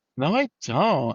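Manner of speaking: put-on Valley Girl accent. A speaker quotes a girlfriend denying she has an accent: imitating girlfriend's Valley Girl accent. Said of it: "she's got a total Valley Girl accent".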